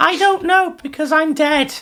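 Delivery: squeaky, high-pitched put-on bat voice. Answering as a bat that has covid: high-pitched bat voice. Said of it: "You have a high-pitched voice for most impressions".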